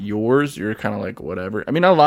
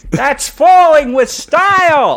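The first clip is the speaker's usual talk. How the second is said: very loud, very high, booming, drawn-out yell; 9 dB louder than usual. Doing an actor voicing a cartoon character, yelling: Joe Pantoliano as Woody, yelling. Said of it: "He's just yelling at it".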